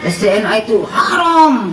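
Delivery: high, laughing, mocking shout.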